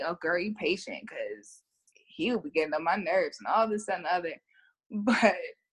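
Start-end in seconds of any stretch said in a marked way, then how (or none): none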